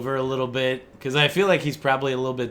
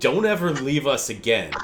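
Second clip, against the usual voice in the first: aggressive, angry voice. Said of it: "you can hear some aggression in his voice".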